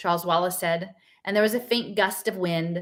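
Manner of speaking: ordinary delivery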